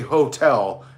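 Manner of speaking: heavy stress on both syllables of hotel. Questioning someone's move into the hotel business, stressing 'hotel'. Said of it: "emphasizing the word ho-tel".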